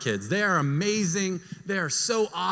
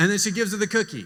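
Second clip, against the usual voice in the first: ordinary delivery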